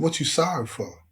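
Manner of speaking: ordinary talk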